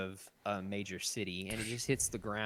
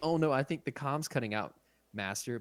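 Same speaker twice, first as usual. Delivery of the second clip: mock breezy, casual, offhand throwaway delivery; 4 semitones higher, 4 dB louder than usual. Retelling Anakin dodging Obi-Wan's order, imitating Anakin casually. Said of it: "But he says it so casually".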